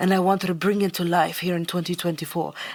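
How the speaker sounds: vague, put-on French-ish accent. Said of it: "that's the accent I chose".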